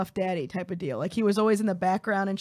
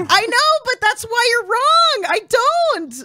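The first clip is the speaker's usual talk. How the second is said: shouting, higher and louder; 11 dB louder than usual. Arguing with another speaker who says they seem to care: yelling. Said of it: "Why are you yelling at me?".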